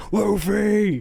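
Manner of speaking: loud, high-pitched scream.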